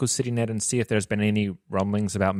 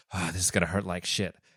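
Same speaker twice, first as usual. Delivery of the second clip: with a sigh, lower and quieter; 3 semitones lower, 5 dB quieter than usual. Voicing a character about to be boosted up to a door: sighing. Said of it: "He's kinda like sighs like".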